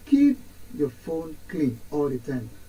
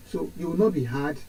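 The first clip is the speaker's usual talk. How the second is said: ordinary talk, nothing marked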